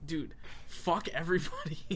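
ordinary talk

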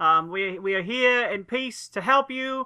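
loud, high shout, called upward.

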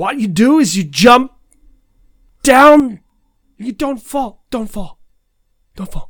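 twitchy voice, high-pitched and loud. Acting out a line a film character should say: twitchy Christopher Walken voice. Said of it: "That kind of twitchy energy that he has".

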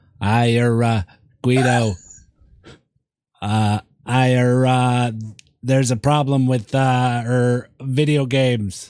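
slow, halting speech full of ers. Telling the others what Kennedy said on TV: Kennedy impression. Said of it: "so Kennedy got on the T V".

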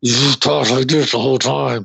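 put-on superhero voice spoken through gritted teeth. Mocking an actor's one-note superhero role: imitating Ben Affleck's Batman through clenched teeth. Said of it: "sounded like he had a mouthful of gum".

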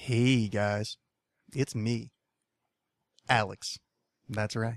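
smooth-sounding delivery. Alex greeting the guys just after waking from a nap, smooth voice. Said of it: "I have the voice of one smooth-ass motherfucker".

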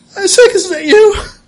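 sobbing. Voicing a character who sees her brother's ghost: bawling. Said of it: "she just starts bawling".

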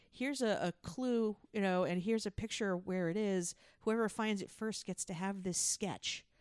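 ordinary talk

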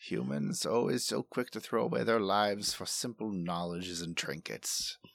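low, muttered grumble under the breath. Player voicing their character walking past the others, mumbling. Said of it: "he walks past you mumbling".

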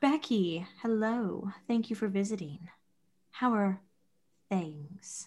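soft, sultry, sexy voice. Narrating a story where Jessica Octopus greets Becky, Jessica Octopus sexy voice. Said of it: "she's back to her sexy voice".

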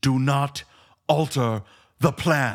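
very slow, deliberate, put-on German accent. Quoting a line to another speaker: German accent. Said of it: "it sounds like a German accent you're doing it in".

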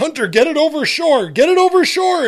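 very high, shrill yelling. Retelling calling to a boy holding a hooked trout: retelling a yell. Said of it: "I'm yelling to him".

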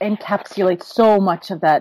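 plain

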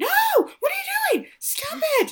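very high, shrill, climbing scream. Telling a story where the wife walks in on Shirley, imitating someone screaming. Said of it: "starts screaming".

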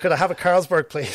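put-on speaking with an Irish accent. Retelling ordering a drink from the air hostess on a flight, in an irish accent. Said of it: "In my Irish accent".

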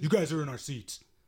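put-on aggressive, confrontational voice with full-on attitude. Retelling how a boyfriend confronted them over seats, imitating an aggressive boyfriend. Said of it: "He was full on 11".

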